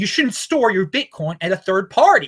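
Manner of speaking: fired-up, excited, insistent, emphatic hammering delivery. Explaining a point to viewers, yelling. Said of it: "I'm yelling here".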